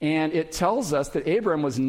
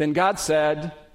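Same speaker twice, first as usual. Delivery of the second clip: ordinary delivery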